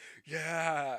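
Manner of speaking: put-on gleeful, loud, high, excited child's whoop.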